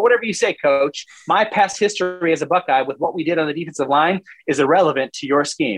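normal talking voice

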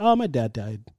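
put-on dry, flat delivery. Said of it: "it was immediately".

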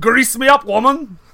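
terrible put-on Scottish accent. Quoting a man who shows up on set, in a terrible scottish accent. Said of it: "doing a terrible Scottish accent".

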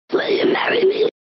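creepy voice from beyond the grave. A monkey character proposes marriage in a played clip: creepy beyond-the-grave voice. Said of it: "creepy, beyond the grave type marriage proposal".

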